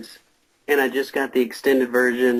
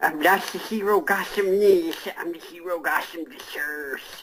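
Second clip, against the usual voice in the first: high voice through bad, oversized fake teeth; 6 semitones higher than usual. Mocking the Dark Knight movies, the speaker talks as if through bad dentures. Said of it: "wearing really bad flipper teeth or dentures".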